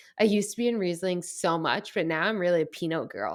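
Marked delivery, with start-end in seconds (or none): none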